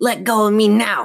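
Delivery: high snarling growl. The dummy, held tight in Chris's grip, speaks to her, growling. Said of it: "the dummy growled".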